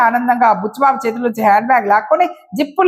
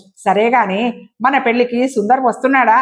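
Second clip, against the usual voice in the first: ordinary delivery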